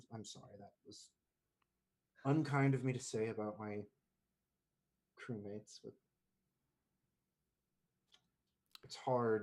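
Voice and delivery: anger draining away, subsiding. Voicing a character in a tabletop game as his anger goes away. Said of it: "anger kind of like goes away".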